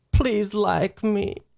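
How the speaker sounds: play-acted, utterly sad, sorrowful voice. Retelling a girl everyone was laughing at, imitating the saddest voice ever. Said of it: "In the saddest, in the saddest voice ever".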